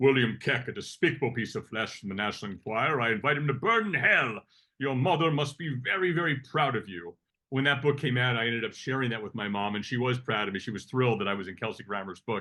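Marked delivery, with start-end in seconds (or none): 0.0-7.2 delivery like a trained classical stage actor. Quoting a line from a memoir out loud: Frasier Crane voice. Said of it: "Shakespearean trained, uh, Fraser Crane voice saying".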